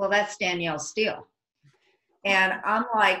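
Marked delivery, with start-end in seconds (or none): 0.0-1.3 put-on flat deadpan tone. Speaker retells their assistant's answer about a woman they didn't recognize, imitating a deadpan reply. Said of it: "my assistant just totally deadpan says".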